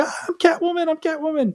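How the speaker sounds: put-on overjoyed squealing scream, very high. Retelling Anne Hathaway's reaction to her agent's call: imitating Anne Hathaway screaming. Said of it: "Hathaway was running around screaming".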